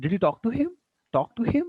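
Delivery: pitch lifted high on him. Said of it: "rising tone is there".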